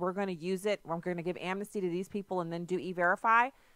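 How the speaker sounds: ordinary talk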